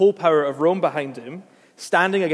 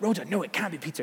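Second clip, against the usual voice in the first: put-on whisper, much quieter; 8 dB quieter than usual. Picturing Christians praying in secret at night, acting out their talk to Rhoda: imitating whispering. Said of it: "they're whispering like".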